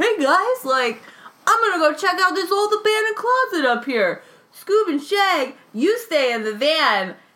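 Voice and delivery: shrill, domineering cartoon voice. Mocking a cartoon character who bosses people around: imitating Fred from Scooby-Doo. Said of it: "he was like".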